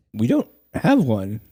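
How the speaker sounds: cracked voice breaking mid-line. Host answering a listener's question on the show, voice cracking. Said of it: "Why did your voice crack?".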